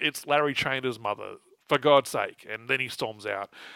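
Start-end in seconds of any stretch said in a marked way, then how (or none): none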